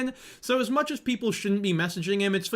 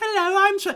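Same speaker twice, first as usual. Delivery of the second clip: put-on clever schoolboy voice, higher and louder; 14 semitones higher, 6 dB louder than usual. Imitating a fake voice from the voice notes: smart schoolboy voice. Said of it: "we know the smart schoolboy voice".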